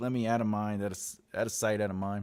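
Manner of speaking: ordinary talk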